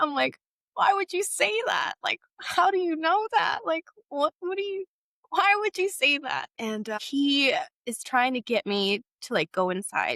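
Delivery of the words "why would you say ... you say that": mock sobbing through the words, pitched high. Speaker retelling her reply to a man's question, imitating own weeping. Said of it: "I just start weeping".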